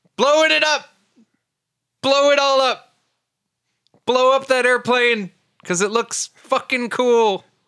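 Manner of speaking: all-out, shrill, very high shouting. Joking around until another speaker tells them to stop, shouting. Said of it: "stop shouting blow it up".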